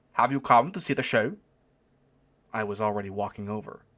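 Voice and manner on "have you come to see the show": put-on heavy German accent, called out loudly across a distance. Reading a story aloud, voicing a man calling out at a tent: thick german accent. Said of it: "thick German accent".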